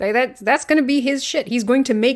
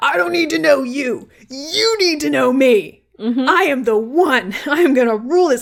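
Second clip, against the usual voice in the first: put-on domineering, totally self-assured loud shout; 3 semitones higher, 3 dB louder than usual. Describing a character walking up a ziggurat, imitating his supremely confident yelling. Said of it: "he is just yelling this with supreme confidence".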